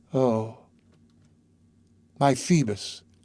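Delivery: subdued, hushed, low, quiet words. A young girl repeats her words to the exhausted priest; low voice. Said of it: "she repeated in a low voice".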